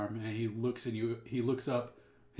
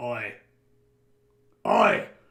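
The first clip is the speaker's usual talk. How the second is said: very loud, swooping put-on Australian accent; 2 semitones lower, 12 dB louder than usual. Voicing a character after being asked to do australian: australian accent. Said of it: "Do Australian".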